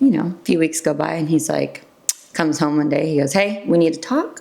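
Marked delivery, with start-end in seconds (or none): none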